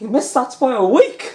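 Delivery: loud, high posh voice. Retelling a commentator's remark on a missed shot: Phil Yates posh accent. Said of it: "in his posh accent".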